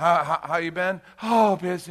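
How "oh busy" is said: put-on breathless voice, much higher. Acting out someone's reply to a greeting, imitating someone out of breath. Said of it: "You need some oxygen?".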